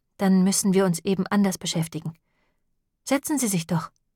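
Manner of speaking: ordinary delivery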